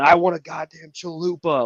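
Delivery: put-on rowdy, high-pitched, drunken yelling and hollering. Speaker retells a soldier in the back of a van at a drive-through, imitating his yell. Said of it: "one guy in the back's yelling".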